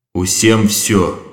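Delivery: muttered mysteriously, cryptic mumble. The president replies to a question after the alarm, muttered mysteriously. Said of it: "дещо загадково пробурмотів президент".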